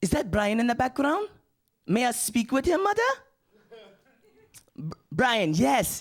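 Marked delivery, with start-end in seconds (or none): 0.0-3.0 quick, pitched-up, chattering voice. Retelling a friend's phone call home to his mother: imitating an African friend. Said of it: "the phone call kinda went something like this".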